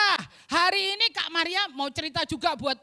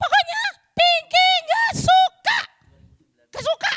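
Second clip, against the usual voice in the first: very high, loud, cross, angry shouting fit; 13 semitones higher, 7 dB louder than usual. Host voices Pinky, asked why she is upset, angry yelling as Pinky. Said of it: "Tiba-tiba marah-marah".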